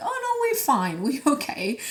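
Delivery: high, squeaky, fake reassuring, dismissive voice. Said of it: "my body feels like".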